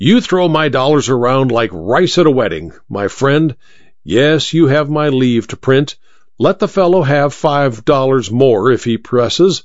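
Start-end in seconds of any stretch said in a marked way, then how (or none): none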